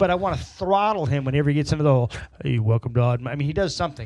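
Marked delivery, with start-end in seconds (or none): 2.4-3.3 louder, put-on radio announcer voice. Mocking how a man greets listeners of Oddmo: radio personality voice. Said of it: "radio personality kind of voice".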